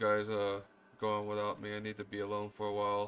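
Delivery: dejected, down-hearted, sad, downcast voice. Leaving the temple, Japira speaks to the group in a saddened down voice. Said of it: "in a uh kind of a kind of a saddened like uh down voice".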